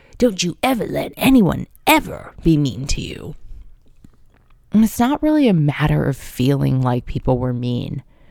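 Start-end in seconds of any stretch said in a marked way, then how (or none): 0.2-3.4 put-on raspy older woman's voice. Retelling what a woman in her 60s in New York told you, imitating a woman's raspy voice. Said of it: "in her raspy voice".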